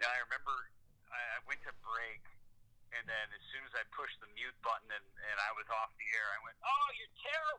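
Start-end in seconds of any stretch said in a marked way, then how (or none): 6.6-7.6 very high, exasperated, frustrated shriek. Broadcaster recalls screaming after muting for a break, retelling a scream. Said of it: "just screamed".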